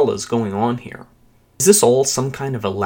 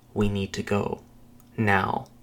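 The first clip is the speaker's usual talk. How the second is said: low murmur under her breath, quieter; 3 semitones lower, 7 dB quieter than usual. Reading a story aloud, a woman urges leaving: murmuring low under her breath. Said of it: "murmurs low, under her breath".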